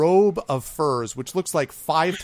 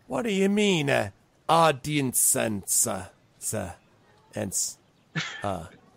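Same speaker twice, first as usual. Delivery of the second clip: very slow, suspicious, wary, puzzled goblin voice; 3 dB quieter than usual. Voicing a goblin confused by the word audience: suspicious goblin voice. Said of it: "one of them looks at you suspiciously".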